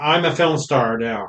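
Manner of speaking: ordinary talk, nothing marked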